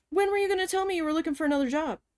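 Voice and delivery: put-on angry, snide, nasty, snarky tone, pitched high. Retelling the office manager's question at work: imitating a nasty angry question. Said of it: "She goes".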